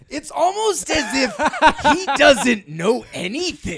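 very high pitch, loud and slow. Summarizing a movie with others, doing a Jason Mantzoukas impression. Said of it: "my Jason Mantzoukas impression".

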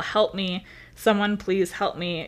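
ordinary talk

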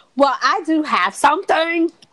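loud, high-pitched yelling. Breaking into the conversation to announce something, yelling. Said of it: "why are you yelling?".

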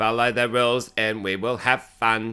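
put-on bored, deadpan, low, flat monotone. Describing the girl running the party, mimicking a boring monotone. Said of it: "boring and monotone and she's like".

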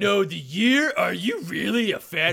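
loud cartoon voice with swooping, bouncing pitch. Teasing the other speaker for not knowing the movie's year, in a Muscle Man voice. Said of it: "Why do I sound like Muscle Man from Regular Show when I'm doing that voice".

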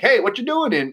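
very high-pitched East Coast accent. Discussing accents, the speaker shows how an East Coaster would sound: East Coast accent. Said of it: "in something like an East Coaster".

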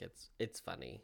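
dead flat delivery without a trace of joy. Remarking that a movie's skyscrapers look like castles: said without any joy. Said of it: "I say that without, like, any drip of joy in my voice".

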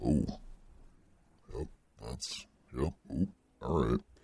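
low, quiet murmur with a swooping tune. Narrating a role-play scene, the storyteller speaks as the Beast looking in the mirror, Beast voice. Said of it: "So, the beast says".

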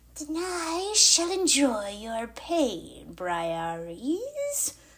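monster voice, very slowly drawn out. Narrator reads a character switching into another figure's voice, monster's voice. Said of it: "He switched to the monster's voice".

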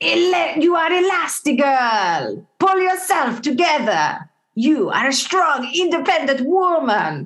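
deliberately bad, high, swooping, slow, drawn-out cartoon voice. Trying out voices, the speaker does her Edna Mode impression. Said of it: "That's my Edna Mode".

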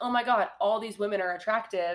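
normal talking voice

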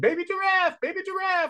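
put-on little-kid yelling, pitched way up. Speaker recalls a two-year-old girl seeing a baby giraffe, imitating a toddler yelling. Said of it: "she just keeps yelling".

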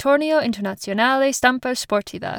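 put-on terrible Italian accent on the name.

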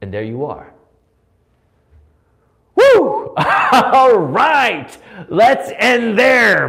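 slow wrestler voice, drawn-out whoop. A speaker wrapping up a talk before a closing prayer, wrestler voice. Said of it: "My wrestler voice is coming out again".

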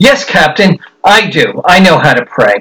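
acted confident, sure tone. Telling a joke, a man answers the ship's captain, retelling a confident reply. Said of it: "He said in confidence".

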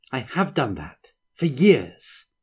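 cutting, pointed, sharp tone with swooping pitch. She answers the man pulling away from her, said sharply. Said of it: "she said sharply".

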